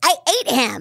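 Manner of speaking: put-on deranged hamster voice. Describing her character Nibbles in an interview, the voice actor quotes her in Nibbles deranged hamster voice. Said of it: "And she's a deranged hamster".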